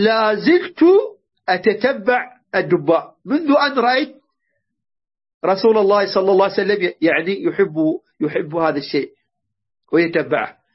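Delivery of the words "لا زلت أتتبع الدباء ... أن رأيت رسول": plain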